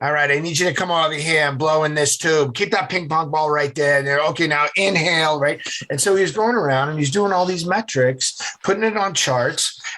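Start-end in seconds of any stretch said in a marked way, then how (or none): 0.0-5.6 put-on nasal New England accent. Recalling a man who took measurements and charted them: nasal New England accent. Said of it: "that nasally New England accent of".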